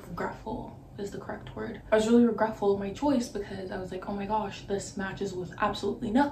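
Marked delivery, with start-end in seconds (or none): none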